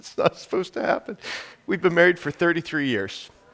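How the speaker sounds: emotional, choked voice. Introducing his wife Anne to the audience, choked up. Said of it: "I'm getting choked up talking about my wife".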